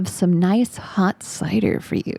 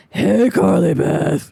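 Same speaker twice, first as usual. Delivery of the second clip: low, deep, hoarse, raspy voice, calling out; 3 semitones lower, 4 dB louder than usual. Reading a story aloud, a brother calling out: deep raspy voice. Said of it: "he called out in a deep, raspy voice".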